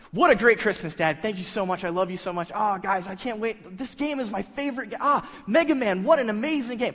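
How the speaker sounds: fake gushing gratitude. Retelling thanking dad for a christmas gift, put-on excited gratitude. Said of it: "I'm really laying it on thick".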